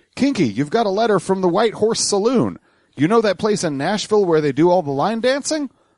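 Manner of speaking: play-acted thrilled, eager voice. Narrator quotes the postmaster bringing an express envelope, in an excited tone. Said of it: "said in an excited tone".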